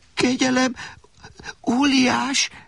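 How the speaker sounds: very high, quavering, trembling pleading voice. Alexander, held up by the giant, adds his plea in a trembling voice. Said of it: "tette hozzá remegő hangon Alexander".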